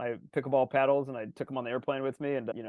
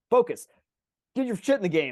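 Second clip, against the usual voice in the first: mock yelling, much higher pitch, louder; 7 semitones higher, 6 dB louder than usual. Describing self-talk on the tennis court after mistakes: imitating yelling at oneself. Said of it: "like yelling at myself".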